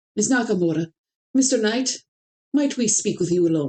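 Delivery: fast put-on Scottish accent. Voicing a character in the story, with a Scottish accent. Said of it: "But I'm going with Scottish".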